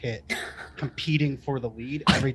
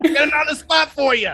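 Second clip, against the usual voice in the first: put-on New York accent, higher and louder; 11 dB louder than usual. Retelling a sales floor call-out: angry New Yorker voice. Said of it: "an angry New Yorker".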